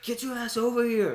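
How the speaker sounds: high-pitched mock yell. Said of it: "you can yell at and just be like".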